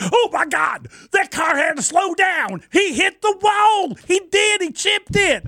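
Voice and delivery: frantic, excited play-by-play announcer voice, very high. Talking about radio voices, the speaker imitates the NASCAR guys: NASCAR announcer impression. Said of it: "Speaking of radio voices, those NASCAR guys".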